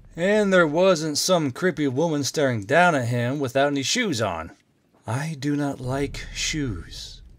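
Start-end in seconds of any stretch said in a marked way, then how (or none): 5.1-7.2 gently spoken, soft, very slow. A woman squatting down beside a man speaks to him: softly. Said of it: "she said softly".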